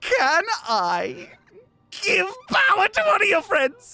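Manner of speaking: giddy, high, bubbling with eagerness. Voicing a masked figure asking permission to give power: bubbling with excitement. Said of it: "bubbling with excitement to tell you this".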